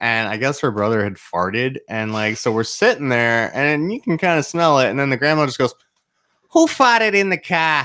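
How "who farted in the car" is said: put-on super thick Boston accent, very high and loud. Retelling what a grandmother driving the car said: imitating grandma's thick Boston accent. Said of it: "this super thick Boston accent".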